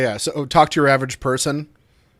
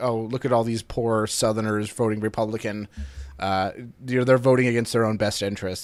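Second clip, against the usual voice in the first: normal talking voice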